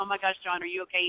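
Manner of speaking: plain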